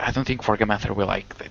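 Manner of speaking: hushed whisper. In a role-play scene, telling the others to keep quiet, whispering. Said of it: "but I'm whispering".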